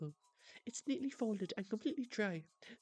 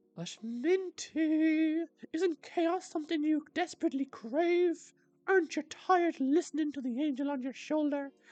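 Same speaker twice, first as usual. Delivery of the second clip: very loud, high, altered put-on demon voice; 5 semitones higher, 8 dB louder than usual. As a shoulder demon tempting minty toward chaos, changed demon voice. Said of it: "I completely changed my voice".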